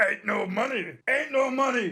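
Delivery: put-on ranting conspiracy theorist host voice. After reading news of damages to Sandy Hook families, try an Alex Jones voice. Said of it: "How do you do an Alex Jones voice?".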